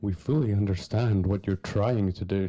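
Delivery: mock dramatic, theatrical reading voice. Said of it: "Very dramatic".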